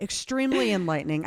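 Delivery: plain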